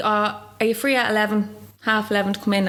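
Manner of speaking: ordinary delivery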